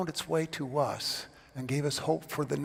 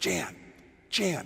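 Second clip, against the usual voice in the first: hushed stage whisper meant to carry across; 3 semitones higher than usual. Retelling his dad leaning around to call to the mom in the front row, retold stage whisper. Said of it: "he says in a stage whisper".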